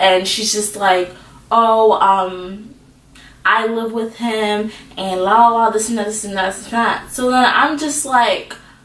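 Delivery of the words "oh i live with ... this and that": ordinary talk, nothing marked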